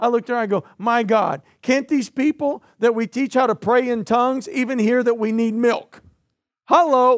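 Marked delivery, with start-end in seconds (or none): none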